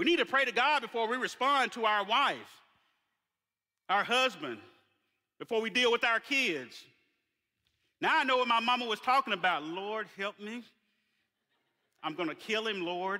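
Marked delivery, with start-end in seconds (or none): 9.6-13.2 mock speech through clenched teeth, quieter. Speaker acts out mama praying to god before dealing with the kids, through clenched teeth. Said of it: "through her teeth with a clenched mouth".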